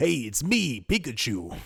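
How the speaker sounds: grotesque, gruff, rough put-on voice, clumsily done. Joking that Stan Lee should voice Pikachu, do a bad Stan Lee impression. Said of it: "My Stanley got way worse".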